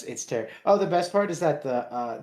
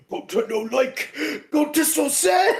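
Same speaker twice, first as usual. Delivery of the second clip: put-on dumb man voice, much higher, louder, slower; 13 semitones higher, 5 dB louder than usual. Recalling how they voiced a role, doing it again: Gonta voice, dumb-man talk. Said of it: "you just talk like a dumb man".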